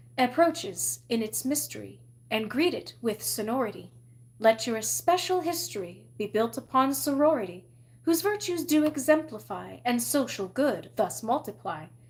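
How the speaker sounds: plain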